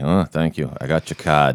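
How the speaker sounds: forced, badly done Boston accent. Mocking an actor's forced accent in a movie: forced Robin Williams Boston accent. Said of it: "Robin Williams cannot do a Boston accent to save his life. And it sounds so forced. It's like".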